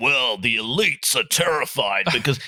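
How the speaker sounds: sudden, abrupt ranting voice. Retelling a dinner when the other diner suddenly switched persona: imitating Alex Jones's ranting voice. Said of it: "and he changed character".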